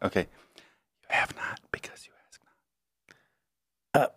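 whispering. In a game where the listener can't hear, the speaker must whisper. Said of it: "I have to whisper".

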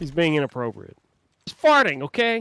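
very loud yell, swooping and climbing in pitch. Speaker complains about a brother acting up in the chat, yelling. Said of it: "Why you gotta yell at him?".

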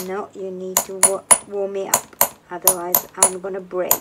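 normal talking voice

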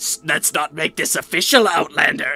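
put-on raspy dark elf creature voice. Imitating the game character's voice line: raspy Dark Elf voice. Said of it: "raspy-ass Dark Elf voice".

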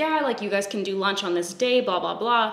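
ordinary delivery

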